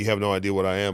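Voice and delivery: plain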